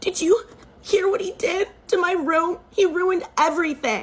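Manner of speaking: acted, high, hysterical wailing and sobbing through tears. Retelling a stepsister running to her stepmother: imitating hysterical crying. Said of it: "she was in hysterics".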